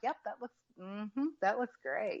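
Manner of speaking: mock-dismissive, slowed tone. Speaker retells showing her work to Keith: Keith's that's-nice-go-away voice. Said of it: "in his that's nice go away voice".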